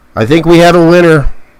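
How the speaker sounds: emphatic, proclaiming announcer-style call. Announcing a winner while checking the cards: yelling into the microphone. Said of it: "I'm yelling in the microphone".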